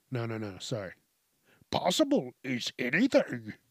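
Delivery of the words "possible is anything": bad, put-on, swooping, sing-song sage voice. Trying out a voice after clearing the throat: Yoda voice. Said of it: "I can't even do Yoda's voice right".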